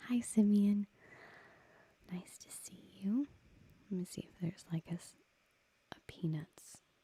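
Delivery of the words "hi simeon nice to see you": put-on cartoon girl voice, higher. Answering a viewer's request for a Peanuts voice: Sally Brown voice. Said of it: "If you are talking about Sally Brown".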